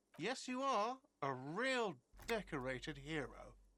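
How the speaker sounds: mocking sarcasm, slow, sing-song, every word drawn out. Voicing a game character praising a cop, sarcastic. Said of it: "You're being sarcastic".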